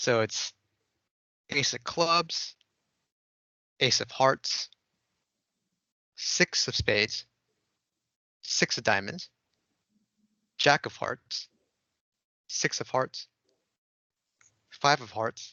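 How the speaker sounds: very slow, drawn-out, deliberate, careful reading. Reading card names aloud so the other person can guess their card, reading very slowly. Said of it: "read the names of the cards very slowly".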